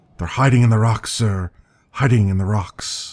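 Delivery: mumbled to oneself, repeating. A narrator voices a beggar talking to himself, muttering. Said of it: "he mutters and murmurs to himself".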